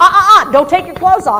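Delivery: very loud, high-pitched scolding tone. Showing the wrong way to stop undressing, contrasted with friendly: scolding tone. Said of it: "makes it sound like she's doing something wrong".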